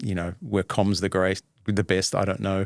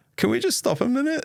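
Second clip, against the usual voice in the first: tiny, very high, pitiful, pathetic little voice. Retelling what you said to the pathologist, in a recreated pathetic little voice. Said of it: "this pathetic little voice that came out of me".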